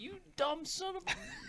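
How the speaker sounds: shrill, very high, drawn-out, rising scream. Imagining someone screaming at the TV: imitating Jen screaming at the TV. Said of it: "Jen's inside screaming at the T V like".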